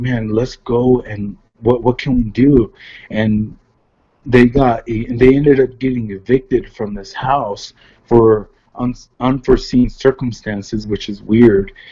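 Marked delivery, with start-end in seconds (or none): 0.0-2.7 put-on, imitated pleading voice. Retelling how others begged for help: imitating someone pleading. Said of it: "they're pleading".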